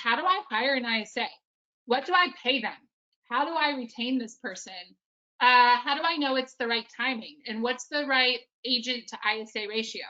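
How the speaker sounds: ordinary delivery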